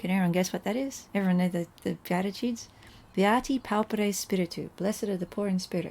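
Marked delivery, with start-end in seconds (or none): none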